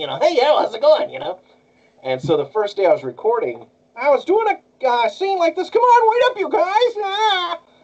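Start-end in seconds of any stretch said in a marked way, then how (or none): 0.2-1.1 squeaky cartoon-sailor voice, much higher. Showing how a character sounded to you when you read the manga, Popeye voice on helium. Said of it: "It sounded more like Popeye, but on helium".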